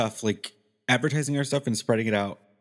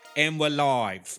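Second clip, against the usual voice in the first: put-on British reality-show accent; 4 semitones higher than usual. Going live, the speaker opens in a Love Island accent. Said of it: "You and that fucking Love Island accent".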